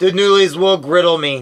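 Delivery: ordinary delivery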